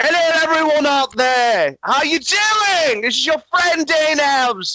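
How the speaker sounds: put-on British accent. Greeting listeners at the start of the show, put-on British accent. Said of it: "I'm not trying to do a fucking British accent".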